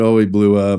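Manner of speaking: usual speaking voice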